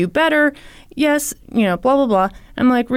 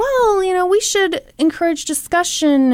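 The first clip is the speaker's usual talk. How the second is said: mocking, sneering, dismissive tone, pitched up; 6 semitones higher than usual. In a discussion, quoting what other people say, mocking others' view as stupid. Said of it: "I let my voice go that way".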